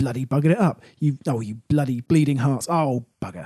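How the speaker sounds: cranky, put-out grumbling, low and peevish. Retelling how a character reacts to defeat: imitating a peevish mutter. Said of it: "all she does is mutter peevishly".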